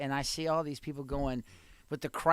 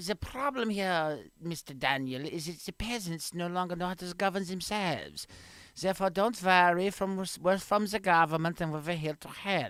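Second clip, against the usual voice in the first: put-on heavy German accent, laid on thick; 3 semitones higher than usual. Playing a government official reassuring the peasants: thick German accent. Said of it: "develop a thick German accent".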